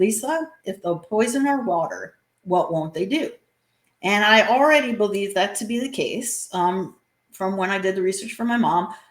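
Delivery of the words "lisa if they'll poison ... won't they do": very calm, even-voiced delivery. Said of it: "looked me dead in the eyes very calmly".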